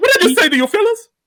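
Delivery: high, loud lisp. Imitating Keegan-Michael Key in a sketch: Keegan-Michael Key lisping high-pitched voice. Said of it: "he has that lisp and that high-pitched voice".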